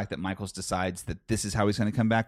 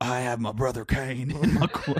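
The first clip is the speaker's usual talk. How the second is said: put-on preachy old pastor voice, pulpit style; 3 semitones higher than usual. Repeating another man's words once more, in an old pastor voice. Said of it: "You sound like an old pastor".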